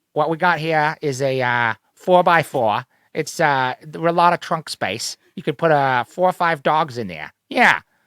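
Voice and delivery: put-on cartoonish Rhode Island accent. Asked to sell a car in that accent, speaker pitches a four-by-four in Peter Griffin accent. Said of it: "sell me a car in that in that accent?".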